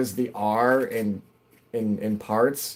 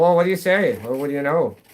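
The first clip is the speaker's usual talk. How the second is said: strong, laid-on Midwest accent; 3 semitones higher than usual. Showing the Midwest accent from Fargo, not too well: imitating the Fargo Midwest accent. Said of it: "the Fargo movie".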